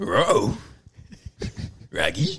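every word begun with an R sound. Asking a guest for impressions, the speaker tries a Scooby-Doo voice themselves. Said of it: "Can you do a Scooby-Doo?".

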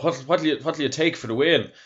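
mock rural Irish accent. Retelling a voice calling out to LeMond from behind, rural Irish accent. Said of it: "this back arse of nowhere Ireland accent going".

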